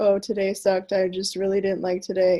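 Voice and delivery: level, unvaried, flat monotone drone. Showing how someone might sound posting on their stories, in a monotone voice. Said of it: "talk in just a monotone voice".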